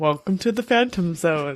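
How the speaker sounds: put-on old-fashioned forties British voice, half trumpeting. Opening the podcast while imitating a co-host: imitating a co-host's voice. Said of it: "British guy from the forties".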